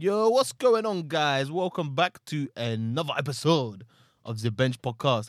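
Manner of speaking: very loud, fake, put-on French accent. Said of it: "I keep doing this French thing".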